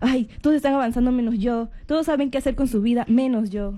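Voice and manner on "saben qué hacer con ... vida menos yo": ordinary talk, nothing marked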